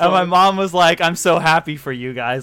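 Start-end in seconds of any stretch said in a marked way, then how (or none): 1.0-2.4 put-on, mock-bitter tone. Speaker retelling mom's reaction while the family watched a movie, imitating mom's bitter tone. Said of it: "very kind of bitter about it".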